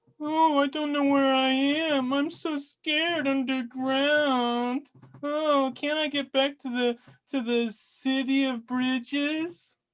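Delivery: teasing, mocking, very high-pitched taunting tone. Narrating a floating being that taunts the player in a cave, the Voice taunting. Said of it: "continues to taunt you".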